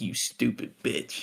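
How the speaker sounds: muttered, whispered under the breath. Retelling a film scene where Bobby insults someone: imitating a muttered insult. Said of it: "Bobby mutters under his breath".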